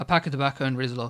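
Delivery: ordinary delivery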